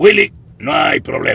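very high, loud, shrill, chopped-up phrasing. Showing how Alf came to speak on the show, in a choppy Alf voice. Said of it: "Cortaba las frases y decía las cosas".

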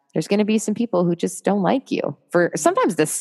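plain

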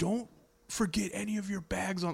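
mock yelled, high-pitched and carrying. Retelling someone yelling at them on the tarmac: imitating someone yelling. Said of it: "like yelling".

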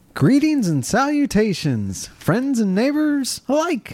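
very high, slow, swooping sing-song put-on dimwit voice. Doing an impression of Henry on request: Henry impression. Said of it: "You want to hear my impression of Henry?".

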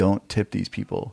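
normal talking voice

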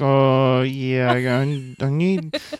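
very slow talk through clenched teeth, jaw barely open. Describing how a man talked, the speaker imitates him talking through barely parted teeth. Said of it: "So it's kind of like a bad ventriloquist".

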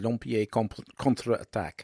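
French accent pronunciation, with a stumble. Saying a french film title aloud: french accent. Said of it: "lovely French accent there".

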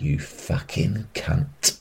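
put-on whispering. Recounting a man who leant in close to his ear, retelling a whisper. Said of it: "leant in and whispered in my ear really close up".

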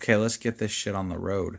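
unenthusiastic, unexcited delivery. Kicking off today's reading of Exodus chapters four to six: unenthusiastic. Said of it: "could you be less enthusiastic?".

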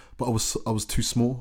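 normal talking voice

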